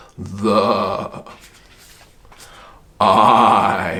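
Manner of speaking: eerie ghost voice, low and spooky. Demonstrating a silly voices game for reading sight cards, in a ghost voice. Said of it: "It could be like a ghost".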